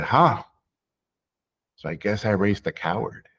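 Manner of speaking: contemptuous, dismissive, disdainful, scornful tone. Retelling a father's reply to plans of taking fewer risks: imitating disdain. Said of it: "he looked at me with this, like, disdain".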